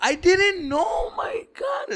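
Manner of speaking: put-on fake sobbing. Retelling pleading innocence after taking a bike: retelling put-on crying.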